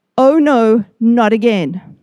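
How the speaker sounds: ordinary talk, nothing marked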